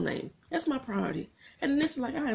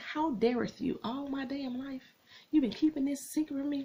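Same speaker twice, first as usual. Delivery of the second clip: mock-furious, acted-out angry voice; 3 semitones higher than usual. Recapping a tv episode, acting out the daughter's reaction, retelling an angry outburst. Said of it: "she pissed the pops".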